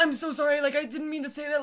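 panicked, frantic, breathless, hyperventilating. Retelling apologizing after being called out in front of everybody; imitating a panicked hyperventilating apology. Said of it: "like hyperventilating".

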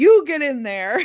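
mock bossy tone, yelled. Retelling how a victim yelled back at a gunman: imitating someone yelling back. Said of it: "She jumps up and yells".

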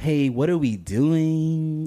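really annoying tone, drawn out. Speaker showing one way to approach someone with a question, in an annoying tone. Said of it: "like with an annoying ass tone".

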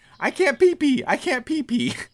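very high, swooping, sing-song yelling. Retelling a fighter at a drug test in the next stall: imitating Anderson Silva yelling. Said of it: "he's just yelling".

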